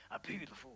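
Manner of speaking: hard, tough-man voice. Picturing someone with chains saying the catchphrase: Mister T voice. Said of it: "picturing him with chains saying".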